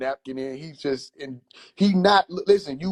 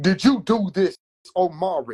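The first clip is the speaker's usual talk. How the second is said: put-on slow, unhurried older man way of talking; 4 semitones higher than usual. Speaker acts out his older uncle questioning him, imitating his older uncle. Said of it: "my older uncle sounded like this when he talked".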